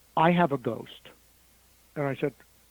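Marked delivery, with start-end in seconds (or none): 0.2-0.9 put-on very quiet voice. Retelling what a woman said on the ride: imitating a very quiet voice. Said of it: "she said very quietly".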